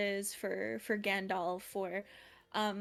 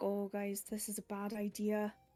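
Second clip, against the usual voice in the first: soft, lilting Irish accent; 4 dB quieter than usual. A voice actor demonstrating her pink tiefling character: soft irish lilt. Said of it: "she's got that that soft lilt".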